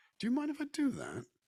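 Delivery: very high voice with a slight English accent. Speaker who once lived in England demonstrates asking a question: slight English inflection. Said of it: "just a bit of an inflection".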